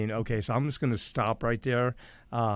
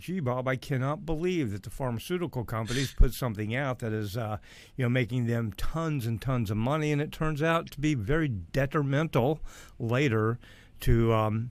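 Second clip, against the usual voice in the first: usual speaking voice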